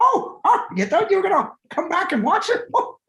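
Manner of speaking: very high, squeaky cartoon voice, swooping around. Joking about how they should say no: Mickey Mouse voice. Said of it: "they should say it in a Mickey Mouse voice too".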